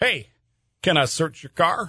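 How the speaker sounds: very polite put-on corn-fed Midwestern accent. Playing a Nebraska State Trooper asking stopped drivers to search their car: put-on polite Midwestern corn-fed accent. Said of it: "in your most politely mid- Midwestern corn-fed accent".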